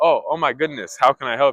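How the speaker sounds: compassionate, caring, sympathetic tone. Acting out meeting a dying old woman on the street: compassionate, caring tone. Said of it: "You're gonna get into your your your compassionate mode".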